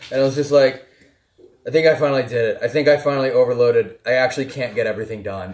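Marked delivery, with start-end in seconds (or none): none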